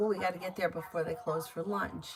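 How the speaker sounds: usual speaking voice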